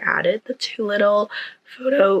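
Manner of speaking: voice cracks high on the word "photo". Speaker describes adding photos to the wall, and the voice cracks. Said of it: "the voice crack".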